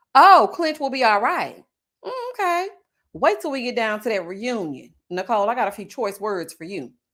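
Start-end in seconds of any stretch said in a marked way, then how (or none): 0.2-1.7 loud, rude, nasty put-on voice. Retelling what was said about Clint in a mock-rude NeNe voice impression. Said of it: "So nasty and so rude in my Nene voice".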